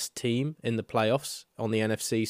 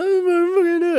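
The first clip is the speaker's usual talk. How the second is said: very high, loud, tearful crying wail; 8 dB louder than usual. Retelling a video of a fan crying before the television: imitating someone crying. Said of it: "stands there crying in front of the television".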